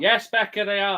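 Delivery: yelling loudly, pitched high. Answering a commenter on their video, shouting. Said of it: "I thought we were all shouting now".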